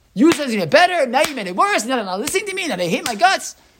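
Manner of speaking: put-on, shrill, very high screaming rant. Retelling the story, the speaker acts out Moshe screaming at God. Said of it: "he starts literally screaming through Moshe".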